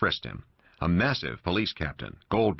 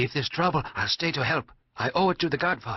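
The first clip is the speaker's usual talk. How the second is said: stage whisper, pitched higher; 9 semitones higher than usual. Reading a novel aloud, the young man offers to stay and help: half-whispering. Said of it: "He whispered in Italian".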